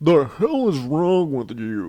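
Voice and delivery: clumsy, drawn-out delivery, not quite right. Recapping a show from memory, doing a bad Peterson impression. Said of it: "I'm not doing a very good impression".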